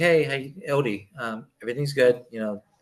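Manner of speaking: plain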